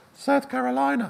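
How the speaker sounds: rather very high-pitched voice. Retelling speaking up to the foreign editor after an awkward silence, in a rather high-pitched voice. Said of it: "in a rather high-pitched voice".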